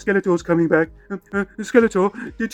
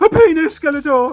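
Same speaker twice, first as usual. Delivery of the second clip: raised, loud, high voice; 7 semitones higher, 5 dB louder than usual. Repeating the answer after being told to say it louder: louder. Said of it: "Say it louder".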